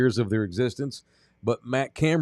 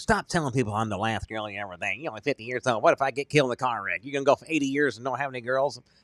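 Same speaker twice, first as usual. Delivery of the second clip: angry, pissed-off scolding. Imitating Nina complaining about what he tells people: imitating Nina pissed off. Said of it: "That's a good Nina voice".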